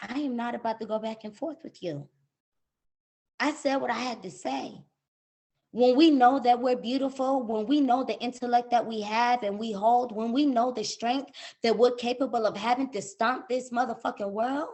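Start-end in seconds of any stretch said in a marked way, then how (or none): 0.0-4.8 calm, composed, collected, softly spoken voice. Retelling what was said to a combative supervisor over the phone, calm and collected. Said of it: "in a calm, collected tone of voice".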